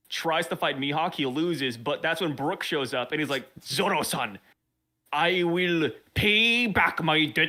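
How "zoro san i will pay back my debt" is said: very slow, fake, put-on Chinese accent. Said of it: "Why is Brook Chinese now?".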